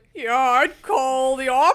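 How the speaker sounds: put-on slow, elderly old grandpa voice. Quoting their grandpa, doing an old person impression. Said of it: "This is like my impression of like an old person".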